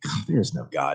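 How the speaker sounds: barely whispered, hushed mumble under the breath. Retelling a first reaction to a church shooting: imitating own mumbling under breath. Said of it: "just like that mumbling, like, under my breath".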